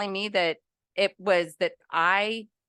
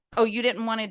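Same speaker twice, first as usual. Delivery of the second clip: put-on woman's voice with attitude; 2 semitones higher than usual. Retelling what the store woman said to the son: imitating a woman with an attitude. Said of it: "with an attitude".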